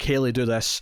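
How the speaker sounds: ordinary talk, nothing marked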